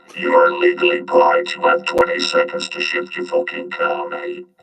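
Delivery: creaky robot voice effect. Doing a parking warning with voice effects: robot voice effect. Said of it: "do that while I'm here with my stupid robot effects".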